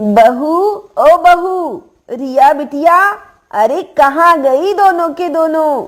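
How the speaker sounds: calling out to others. Mother calling for her daughter-in-law and Riya: shouting, calling out. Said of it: "आप इतनी जोर से चिल्ला क्यों रही हैं".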